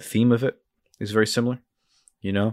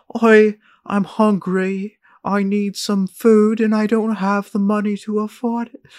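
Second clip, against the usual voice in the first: very high, pleading, put-on British accent; 12 semitones higher, 4 dB louder than usual. Describing a character in a teaser, the speaker mimics his lines: fake British accent. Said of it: "It sounds like a fake British accent".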